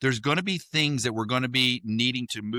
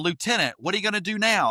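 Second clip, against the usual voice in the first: mock, high-pitched, loud sergeant-style yell; 7 semitones higher than usual. Retelling a sergeant training tank commanders: imitating a sergeant yelling. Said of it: "he's yelling at us".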